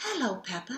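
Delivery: soft, hushed half-whisper under the breath. Narrator voicing the tooth fairy greeting Peppa as she sleeps: half-whispering. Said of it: "she whispered".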